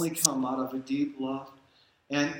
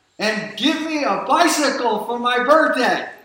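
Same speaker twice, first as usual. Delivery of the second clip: put-on very loud, high-pitched little-boy shout; 8 semitones higher, 12 dB louder than usual. Retelling a joke about a little boy praying: imitating a little boy shouting. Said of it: "And then he shouted".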